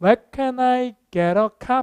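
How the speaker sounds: question-like tune climbing at the end on "copy". Explaining an English question in Korean, rising at the end on copy. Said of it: "이렇게 올라가요".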